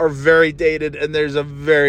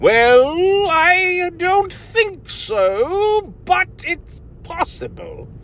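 put-on high-pitched, slow elderly voice. Wondering aloud whether they'll end up talking like an old person, slow old-person voice. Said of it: "will I slow down to where I talk like this".

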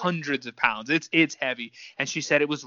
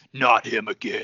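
low, dark, deep male voice; 3 semitones lower than usual. Retelling a voice they heard, the speaker imitates a dark, deep man's voice. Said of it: "Dark, like deep man's voice".

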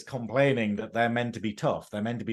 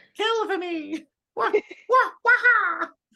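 very high, slow, stretched-out cartoon voice; 4 dB louder than usual. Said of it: "saying non-Mario stuff in that voice".

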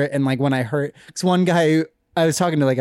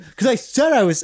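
put-on yelling, higher pitch; 9 semitones higher than usual. Retelling an argument with a driver: imitating someone yelling. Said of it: "he just starts yelling at me".

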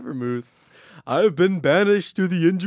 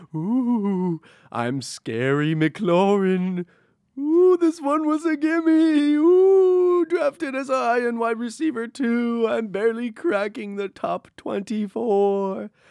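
spooky, eerie ghost voice; 4 semitones higher than usual. Pivoting to wide receiver Terry McLaurin and speaking as him, spooky Terry McLaurin voice. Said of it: "You're getting you really like this voice".

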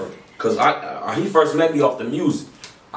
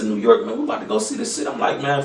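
normal talking voice

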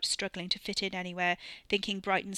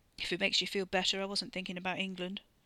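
ordinary delivery

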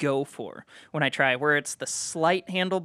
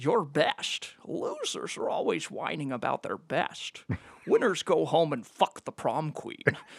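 sing-song movie-star voice, pitch swooping all over; 2 semitones lower, 6 dB quieter than usual. Quoting a favorite line from The Rock after being asked to do it: Sean Connery impression. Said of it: "And then Sean Connery's like".

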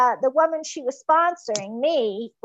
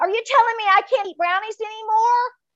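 put-on high, blurted, panicky five-year-old voice; 9 semitones higher than usual. Speaker retells blurting out a question to her in a panic; sounding like a five-year-old. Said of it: "I sounded like a five-year-old".

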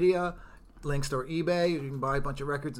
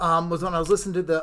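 quick, rushed talk, rattled off. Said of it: "I'll be talking faster than usual".

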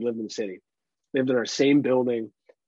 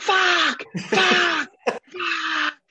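put-on very high, gleeful, excited, drawn-out yells; 3 dB louder than usual. Retelling a video the mom sent, acting out Ryan yelling excitedly. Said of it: "She's getting all excited".

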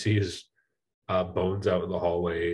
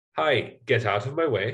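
sunny, friendly, cheery, pitched-up gnome voice; 5 semitones higher than usual. Speaker voicing a gnome passing two characters, cheery gnome voice. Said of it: "he'll say it in sort of a cheery way".

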